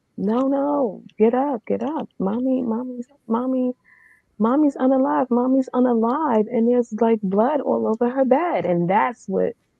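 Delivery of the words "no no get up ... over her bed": put-on child's scream, higher. Retelling a child waking people and screaming: imitating a child screaming. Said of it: "And he's screaming".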